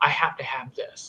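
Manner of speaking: acted quiet mutter. Retelling what an eleven-year-old muttered while reading his comic: imitating muttering under breath. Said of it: "under her breath go".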